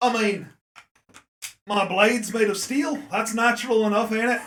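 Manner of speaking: put-on accent wandering between Australian and Irish. Voicing a character in a tabletop game, answering a player's question; put-on Australian, Irish accent. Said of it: "[name] taking a look at you. He sees your axe. He goes, "That's not a knife." / [name] taking a look at you. He sees your axe. / Australian, Irish. / that's me, [name]".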